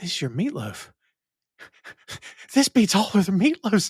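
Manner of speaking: play-acted overjoyed, happy voice on edge of tears. Recounting a kid character's reaction to a meal, imitating happy near-tears voice. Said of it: "And like he's about to cry".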